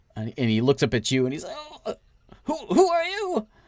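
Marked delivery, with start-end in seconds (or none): 1.5-3.4 very high, weak, frightened voice. A badly burned, cowering figure looks up and asks who you are: weak voice. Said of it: "He's very weak".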